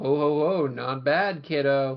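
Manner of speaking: very slow, drawn-out, taunting chuckle. Retelling how Archimedes taunts Knuckles while training him: imitating Archimedes taunting. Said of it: "this kind of taunting".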